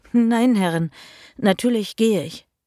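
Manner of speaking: stumbling, stammering speech. A servant answers the mistress's threat of a slap, stammering. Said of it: "stammelte ich".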